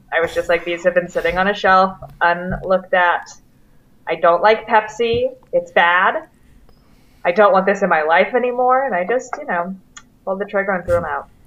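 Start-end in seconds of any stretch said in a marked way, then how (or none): none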